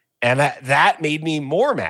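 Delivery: ordinary talk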